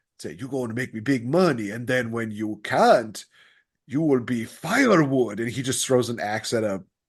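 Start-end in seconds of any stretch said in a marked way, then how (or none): 0.4-5.4 put-on Italian-accented voice. Retelling a line from the puppet kids movie: italian accent. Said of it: "we started with an Italian accent".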